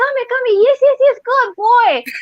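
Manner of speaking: put-on pitch building toward good boy, climbing through come here. Showing a listener how they call their dog to the chew toy, with a rising tone. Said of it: "see my tone, it's like increasing".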